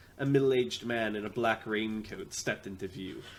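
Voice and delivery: ordinary talk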